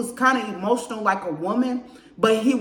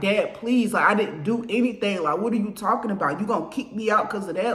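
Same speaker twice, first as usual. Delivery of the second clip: mock imploring, begging, pleading voice. Retelling begging Dad not to kick them out: retelling own begging. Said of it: "the first and only time I ever begged him".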